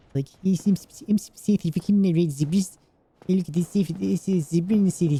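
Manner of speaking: mumbled fake South African accent. Speaker showing how to fake different accents, bad south african accent. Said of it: "South African, you just go uh".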